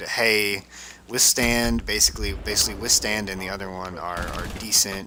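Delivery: ordinary talk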